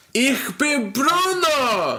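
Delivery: put-on German accent. During a show chat about terrible sandwiches, the speaker jumps into a German accent. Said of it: "I can read it in my German accent".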